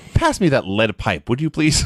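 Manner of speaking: ordinary delivery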